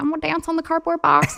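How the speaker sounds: put-on high little-girl ballerina voice. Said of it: "Is that the ballerina voice?".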